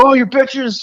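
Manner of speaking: very high, shouted, shrieking panic. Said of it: "You just hear Nicolas Cage go".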